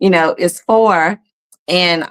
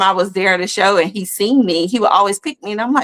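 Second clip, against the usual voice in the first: usual speaking voice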